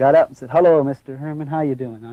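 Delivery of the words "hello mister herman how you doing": acted cheery, mock-cheerful voice. Speaker retells the captain greeting him in his office, imitating a cheery greeting. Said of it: "cheery attitude".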